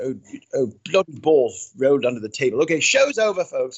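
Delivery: fake, silly British accent, played for laughs. Retelling own joke after dropping something: put-on British accent. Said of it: "I would put on a British accent".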